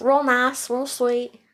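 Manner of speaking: folksy Southern country accent. Repeating a description after being asked about it: country hospital voice. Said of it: "It's my hospital voice coming out".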